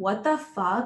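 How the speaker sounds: ordinary talk, nothing marked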